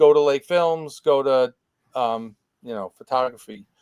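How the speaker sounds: plain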